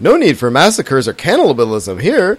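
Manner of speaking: bubbly, chirpy bird-man voice, swooping pitch. Reading out a quote they wrote down about the Rishi people; bubbly bird-man voice. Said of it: "you have to imagine it in the bubbly bird man voice".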